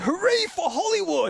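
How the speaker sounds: fake American accent, pitched very high. Showing the one phrase that can be said in an American accent. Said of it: "I can say".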